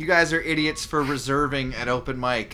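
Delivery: plain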